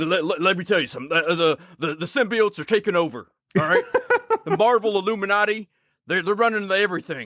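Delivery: screaming rant, voice pitched very high. Riffing on a co-host as the Alex Jones of geek culture, mock-screaming a rant. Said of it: "Jake is shirtless and screaming".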